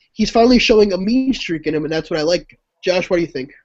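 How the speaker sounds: usual speaking voice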